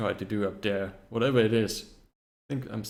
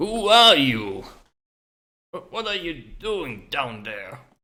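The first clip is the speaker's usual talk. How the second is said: put-on old man voice, much higher and louder; 5 semitones higher, 8 dB louder than usual. Narrating a scene, then voicing the figure who speaks out: elderly male voice. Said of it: "I can hear an elderly male voice speak out".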